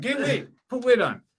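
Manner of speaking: very high, put-on British accent. Joking with a co-host about a comedian's weight, in a british accent. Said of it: "that's our British accents".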